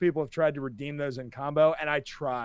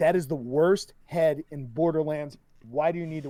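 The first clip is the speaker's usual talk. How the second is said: ordinary talk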